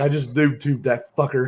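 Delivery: mock laughing while talking. Retelling a grenade launcher incident, quoting the private: imitating him laughing. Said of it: "And the private's laughing. He's like".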